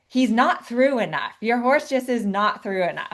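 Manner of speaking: put-on German accent, critical coaching tone. Quoting the master trainer stopping a horse training session, in his German voice. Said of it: "in his German voice".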